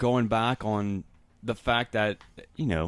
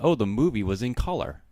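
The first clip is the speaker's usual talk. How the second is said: plain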